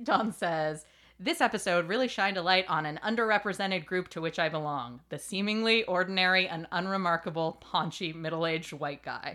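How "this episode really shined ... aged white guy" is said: plain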